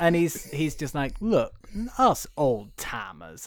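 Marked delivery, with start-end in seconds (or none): 1.2-3.5 put-on southern accent. Quoting a character from the film, in a southern accent. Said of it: "I'm relatively okay at a southern voice".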